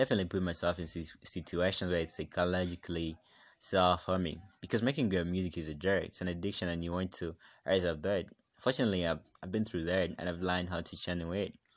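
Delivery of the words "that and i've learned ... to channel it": ordinary talk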